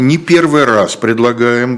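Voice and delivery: ominous, menacing, threatening intonation. Urging listeners, not for the first time, with threatening intonation. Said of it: "говорю я с угрожающей интонацией".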